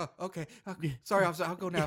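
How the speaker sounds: meek, submissive, timid, backing-down tone. Acting out the sheriff backing down to a federal agent: imitating a meek sheriff. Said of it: "he's so meek".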